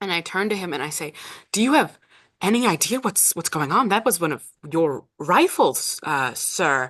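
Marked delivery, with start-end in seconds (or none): 1.5-6.9 warm-hearted, open-handed, charming, open and friendly. Player's character turns to him and asks a question, charming and open. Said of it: "I would like to be charming and open with him".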